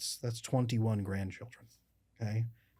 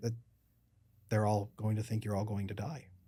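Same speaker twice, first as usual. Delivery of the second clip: normal talking voice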